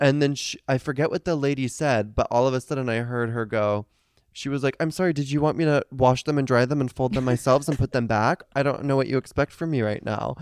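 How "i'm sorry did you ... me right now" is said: put-on overly nice, sweet, patronizing tone. Retelling what a lady said to a woman about her towels: mock-sweet condescending tone. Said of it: "But like saying it so nicely".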